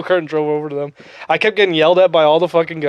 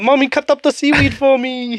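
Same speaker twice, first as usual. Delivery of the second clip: put-on very high, tiny little-kid baby voice; 9 semitones higher than usual. Teasing the other speaker by mimicking how they asked their mommy: baby voice. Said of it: "a baby voice".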